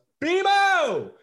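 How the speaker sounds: high, loud sudden yell carrying far. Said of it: "someone just out of nowhere yells".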